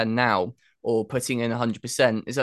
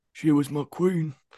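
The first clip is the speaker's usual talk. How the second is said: slow, drawn-out, deliberate delivery; 4 semitones higher than usual. Doing a quick impression for a guest: Kit Harington impression. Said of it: "I've gotta do a quick impression".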